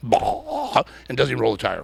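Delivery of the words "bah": high, blurted, bogging engine noise. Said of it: "he steps up and goes".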